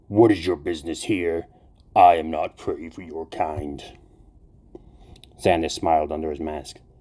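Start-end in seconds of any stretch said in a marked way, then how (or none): 0.1-3.8 reverberating, ringing demonic voice. The demon turns on Xander, who asked for a word: Melkai's reverberating demonic voice. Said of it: "The air over the altar shimmered and slowly coalesced into a familiar demonic form. ... The demonic voice reverberated through the room".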